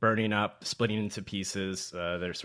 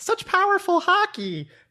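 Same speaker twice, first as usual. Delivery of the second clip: put-on very high, very loud, booming, girlish little girl squeal; 9 dB louder than usual. Reading aloud a line of a character turned into a kid: attempted little girl's voice. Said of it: "I can't do a little girl's voice".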